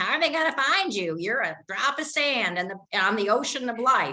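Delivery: mock sneering, fast, snarky nagging voice. Voicing the snarky nagging voice inside a question: mock-snarky nagging voice. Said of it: "the snarky voice that goes".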